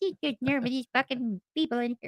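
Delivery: put-on indignant, irritated old lady voice, griping. Picturing a bystander's reaction to a prank: imitating a pissed-off grandma. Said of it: "someone's grandma being all pissed off".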